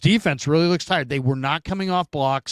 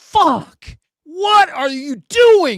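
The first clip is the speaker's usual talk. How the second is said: very high-pitched, drawn-out, furious yell; 13 semitones higher, 7 dB louder than usual. Recalling a team calling a timeout, speaker re-enacts yelling at them. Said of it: "I yelled".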